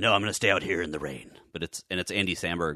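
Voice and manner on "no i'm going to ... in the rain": over-the-top dark brooding hero voice. Imitating a dark, brooding comic hero: over-the-top brooding Scarlet Spider voice. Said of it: "he's just over the top like Batman".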